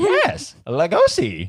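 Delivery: very high, loud voice with swooping pitch. Quoting a line from a film to show how he talks, Ed Wood impression. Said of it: "That's how he talks".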